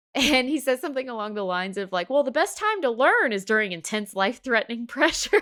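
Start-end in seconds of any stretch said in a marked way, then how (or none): 2.1-5.4 sarcastic tone, higher pitched and louder. Retelling a movie scene, imitating Peter Parker being sarcastic. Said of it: "obviously he's being sarcastic".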